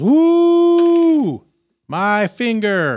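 very high, very loud, pained wolf wail. Voicing the wolf just shot in the finger: voicing the wounded wolf. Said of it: "And the wolf says".

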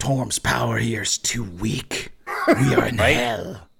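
devilish voice like a pit fiend. Game master voices the devil inside the shield, speaking to the party: Gargoth's voice. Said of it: "so you guys have learned that the Shield of the Hidden Lord contains within it the essence or spirit of a very powerful devil called Gargoth, and who was a pit fiend at one point. / so you guys have l".

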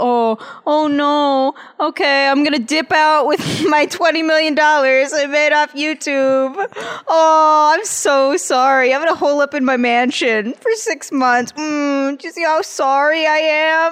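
sarcastic, mocking put-on delivery. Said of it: "it's always the filthy rich celebrity".

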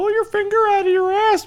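very high, squeaky, cartoon-mouse-like voice. Quoting what a show character basically says: Shoresy voice. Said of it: "your voice isn't selling it to me".

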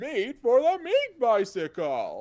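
loud, bellowing brute voice, swinging the pitch. A dad, at his son's request, does a game line in classic Goliath voice. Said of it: "in that classic Goliath voice".

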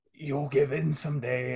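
feeble, barely-there, very weak, soft creature voice. Speaker retells a scene where a creature speaks to a woman: mock-weak creature voice. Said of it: "the creature just says very weakly".

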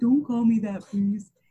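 mopey voice pitched a bit high. Recapping a scene where he is called by his title, doing an Andy impression. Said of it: "Good Andy impersonation".

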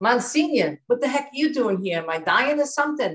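put-on Jersey-accented plain speech. Speaker retells what she said to the pastor giving her anointing: Jersey accent. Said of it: "So she had that Jersey accent right up".

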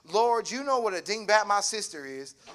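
ordinary delivery, nothing marked

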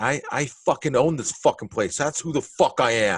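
acted angry outburst. Speaker recounts confronting a man who asked why he touched him, retelling going off angrily. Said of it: "And I just go off like this".

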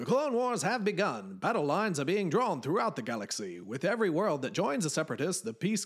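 epic trailer-style narration, dramatic, high and swooping. Trying to read the opening lines in the Clone Wars series voice. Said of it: "maybe I should try and do this in the Clone Wars series voice".

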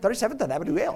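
words pronounced the Spanish way. Showing how they'll tell somebody the park address, in Spanish. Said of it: "I'm going to say it in Spanish".

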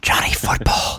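speaking in a hushed whisper. Talking about a football player, saying his nickname again, whispering. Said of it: "They always whisper something like that".

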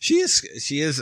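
sudden, unexpected high note. Mid-discussion, the speaker's voice unexpectedly jumps to a high pitch. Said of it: "I can't believe my voice did that".

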